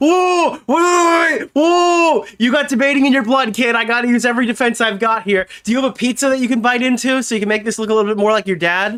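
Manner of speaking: acted-out defensive tone, high and scrambling. Mocking another speaker's reaction during the debate: imitating someone getting defensive. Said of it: "he's getting defensive. He's like".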